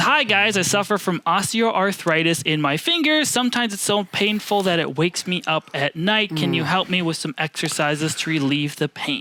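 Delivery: ordinary delivery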